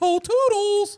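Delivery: bad, very high, loud cartoon squeak voice. Trying a line after saying the impression can't be done: bad Mickey Mouse voice. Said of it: "I can't do a Mickey Mouse".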